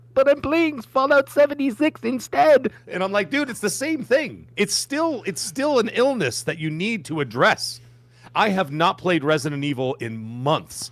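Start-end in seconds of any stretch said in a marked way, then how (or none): 0.1-2.7 squeaky, very high, raised, squeaked-out words. Retelling his sudden reply mid-conversation, squeaking out the words. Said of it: "he squeaks out".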